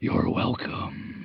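eerie, breathy, ghostly spirit whisper. Voicing a Ouija spirit answering a goodbye: whispering spirit voice. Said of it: "you hear it whisper".

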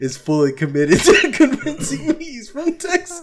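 high-pitched, laughing, disbelieving tone.

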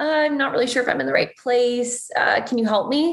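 high, helpless, pitiful lost-puppy voice. Podcast guest demonstrating her lost puppy dog approach to asking for help: acting pitiful. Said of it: "because you kind of are like pitiful".

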